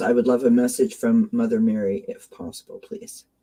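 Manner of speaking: ordinary talk, nothing marked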